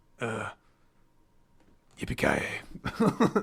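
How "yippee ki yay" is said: bad, deep, masculine voice. Retelling a movie scene where a man walks a kid down: Bruce Willis impression. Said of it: "deep, masculine man".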